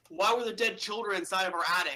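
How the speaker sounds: half-shouted, mild called-out yell. Playing a character at an unanswered door: yelling. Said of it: "I yell".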